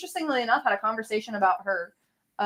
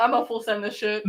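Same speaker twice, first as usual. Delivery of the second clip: usual speaking voice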